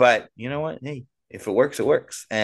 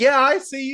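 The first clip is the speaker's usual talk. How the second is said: mock, very high-pitched shout; 14 semitones higher than usual. Fan with seats close to the players retells heckling one, retelling a yell. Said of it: "And I'm yelling at the guy".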